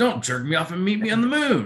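acted-out eager, upbeat, gung-ho delivery. Retelling how a movie line was delivered: imitating an eager line delivery. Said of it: "as if he was like".

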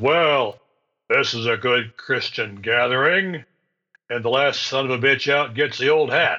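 great big, room-filling, booming voice. Retelling what Ferg said coming into a wake, imitating Ferg's great big voice. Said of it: "said in his great big voice".

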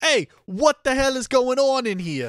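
put-on mixed British and New Jersey accent. Demonstrating a line walking into the apartment, in a mixed British-New Jersey accent. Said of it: "Sometimes it sounds British and sometimes it sounds New Jersey".

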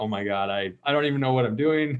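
play-acted mortified, sheepish, embarrassed woman's voice. Telling about a lady who fell asleep, imitating an embarrassed woman. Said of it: "She was so embarrassed".

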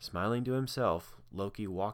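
ordinary delivery

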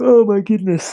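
talking through a yawn. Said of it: "I am yawning so much".

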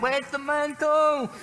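slow high yelling.

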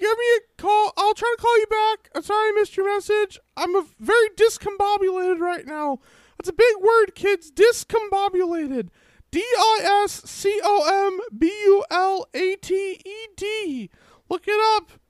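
voice pitched way up and loud. Recording a mock phone message, the speaker does a Mickey Mouse voice. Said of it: "this is mickey mouse".

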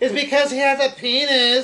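put-on very loud, shrill, drawn-out drunken yelling. Retelling a woman arguing as the manager walks away: retelling a loud shout. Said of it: "loud as hell".

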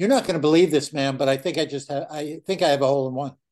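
ordinary talk

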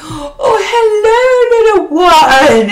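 very slow, very high put-on British accent. Recalling a lady at school who grabbed her cheeks: put-on English accent. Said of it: "I just gave her a fucking English accent".

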